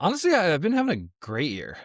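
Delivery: surprised tone. Podcast host answering how his year has been, sounding surprised. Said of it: "you sound so shocked by that".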